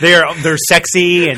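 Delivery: very loud, drawn-out sarcastic gush. Praising the convention hackers to the others: sarcastic. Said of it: "don't get too sarcastic".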